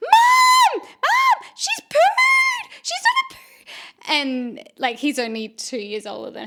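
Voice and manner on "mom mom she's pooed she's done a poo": put-on very high, loud screaming little boy, drawn-out wail. Retelling a son calling out about his sister: imitating a child screaming. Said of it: "my son is screaming, going".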